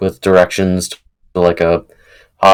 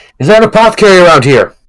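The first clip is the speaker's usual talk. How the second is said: acted-out yelling; 11 semitones higher, 6 dB louder than usual. Retelling how someone called out to get people's attention, retelling a yell. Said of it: "Chris yells out".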